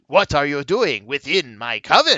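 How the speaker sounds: put-on vampire voice. Voicing the vampire leader who confronts the party: vampire leader voice. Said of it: "The vampire says".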